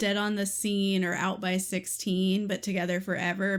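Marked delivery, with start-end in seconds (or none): none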